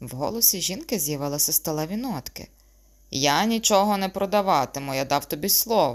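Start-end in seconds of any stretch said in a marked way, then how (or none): 3.1-6.0 testy, irritated, annoyed tone. A young man about to leave answers his mother's question; irritated reply. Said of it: "роздратовано відповів молодий чоловік".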